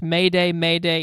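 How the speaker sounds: ordinary talk, nothing marked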